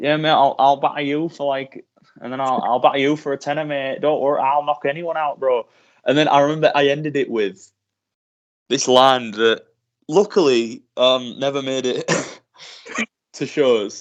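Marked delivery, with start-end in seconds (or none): 0.0-5.7 put-on chav accent, tough, boastful hard-man tone. Recalling a character picked up five months into training, put-on chav accent. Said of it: "I'll talk like a chav for it".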